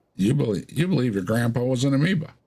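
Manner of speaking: high, preachy, taunting tone. After naming an internet science denier, speaker slips into a Kent Hovind impression. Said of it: "went into Ken Hovind phase there".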